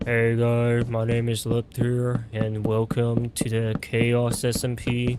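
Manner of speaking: flat, slow, unvaried, plodding monotone. Imitating one's own past intro greeting: flat monotone. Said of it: "I was way more monotone personally".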